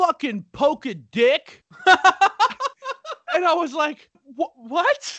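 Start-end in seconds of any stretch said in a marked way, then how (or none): 0.0-1.6 put-on loud hollered crude jeer. Retelling driving away as a guy at the body shop yells at him: imitating someone yelling. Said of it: "I hear one of them yell at me like".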